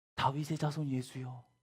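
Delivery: normal talking voice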